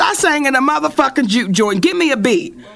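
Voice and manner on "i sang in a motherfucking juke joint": ordinary talk, nothing marked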